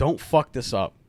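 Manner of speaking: imitated whisper. Retelling what a drunk father whispered in the ear: imitating a whisper. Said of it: "he leans in and whispers in my ear".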